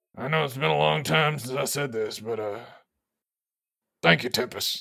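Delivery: soft muttered aside under the breath. Speaking in character, quietly giving thanks: muttered under the breath. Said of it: "under my breath, I say".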